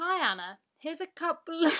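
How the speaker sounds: high, ultra-posh voice, laid on very thick. Reading an email aloud to Anna, in the poshest voice ever. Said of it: "give her the poshest voice ever".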